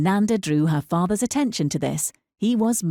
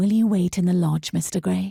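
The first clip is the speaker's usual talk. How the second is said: very quiet, hushed, very soft voice. A lay sister portress lets visitors in and speaks in a very quiet voice. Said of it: "she said in a very quiet voice".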